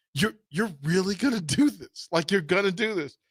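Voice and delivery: imitated giggling while talking. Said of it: "She's giggling".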